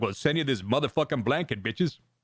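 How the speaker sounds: very deep, dropped low voice. Imitating the same kid now that his voice has dropped: imitating a voice dropped very low. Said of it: "his fucking voice has dropped nineteen octaves".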